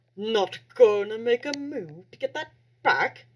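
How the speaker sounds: sudden put-on British accent. Voicing a bully taunting a kid, in a british accent. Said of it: "Why am I flipping into a British accent?".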